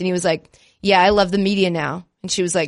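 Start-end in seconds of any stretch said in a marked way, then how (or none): none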